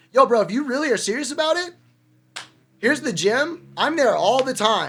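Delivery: steady, loud, trying to stay cool. Retelling own words to a neighbour who wanted to fight: calm but loud. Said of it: "I kinda calmly tell him, like, and loudly".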